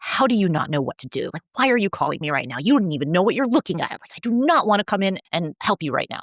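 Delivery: acted grumpy, put-out, cranky irritated delivery. Retelling what an oral surgery resident said when called late at night: imitating a cranky person. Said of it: "he was so cranky about me calling him".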